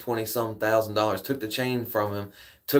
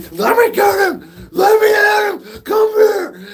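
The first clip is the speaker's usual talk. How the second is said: frantic yell, higher and louder; 11 dB louder than usual. Retelling a man trying to get at a guy behind a counter: imitating someone going nuts. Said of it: "he goes nuts".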